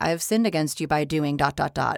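ordinary talk, nothing marked

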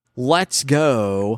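ordinary talk

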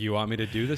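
plain

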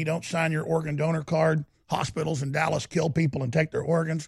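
plain

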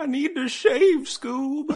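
put-on old man voice, pitched very high. Joking about hair just on the chin, Shaggy impression like an old man. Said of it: "Kind of sounded like an old man".

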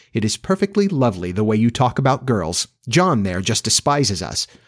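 ordinary delivery

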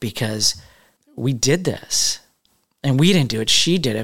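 emotional, choked up, voice catching and breaking. Talking about someone who shared her story on their platform, choked up. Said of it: "I'm getting choked up again just talking about it".

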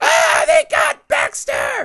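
put-on very high, distraught wailing cry. Recapping a movie scene, the speaker is imitating a woman screaming. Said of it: "she's losing it ... Just screaming and wailing".

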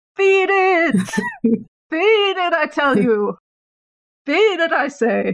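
high, distant holler from afar. During a game, while the others grapple a creature, Six shouts from down the hallway. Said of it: "Six just shouts from down the hallway".

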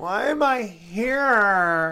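bratty, high, whiny complaining voice, stretched out. Joking around, echoing the other speaker's complaint: whiny bitchy voice.

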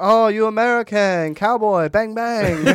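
put-on Japanese accent, very high, shrill, loud, booming. Recalling a bit the speaker got canceled for, imitating a Japanese guy. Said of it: "I did like the Japanese guy imitation".

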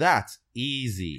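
mock smug, confident, cocky, drawn-out "easy". Retelling what a man said before throwing a trash bag, imitating a cocky tone. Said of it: "he says in a cocky manner".

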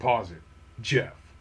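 dead-serious, solemn, grave, low and hushed. Retelling what he said while looking at the camera, imitating his most serious voice. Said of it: "he says in the most serious voice".

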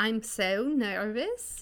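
put-on Swedish-sounding accent. Copying someone's accent during the bit, Swedish accent. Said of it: "that was Swedish".

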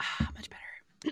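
soft, breathy, close-mic ASMR whisper. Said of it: "Little A S M R for you".

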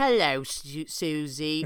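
put-on British accent. Imitating a cartoon pig greeting a friend: Peppa Pig British accent. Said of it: "mid-British accent, Peppa would be like".

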